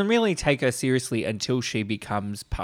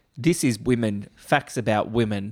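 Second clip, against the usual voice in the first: usual speaking voice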